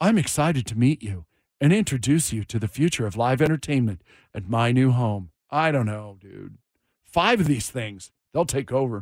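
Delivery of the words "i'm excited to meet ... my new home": machine-like, synthetic robot voice. Voicing the venue robot greeting a concertgoer in the lobby: voicing the robot. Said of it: "Just you and the robot".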